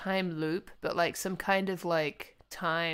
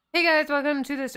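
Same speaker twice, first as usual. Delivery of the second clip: far more forceful than meant, loud and high; 7 semitones higher, 6 dB louder than usual. Greeting everyone at the start of the stream: loud, forceful greeting. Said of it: "it's a little more forceful than I anticipated".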